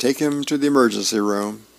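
ordinary delivery

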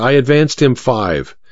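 ordinary delivery, nothing marked

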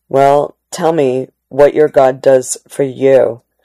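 ordinary delivery, nothing marked

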